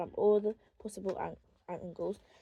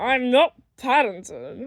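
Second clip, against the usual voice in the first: gruff, booming, very loud voice; 4 semitones higher, 11 dB louder than usual. Narrator reading a reply from someone hidden behind the bed, gruff voice. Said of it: "said a gruff voice".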